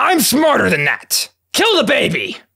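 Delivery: high, mild yell of nonsense, kept light. Talking through deciding to kill an owlbear cub after the fight, screaming. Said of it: "I'm just screaming nonsense now".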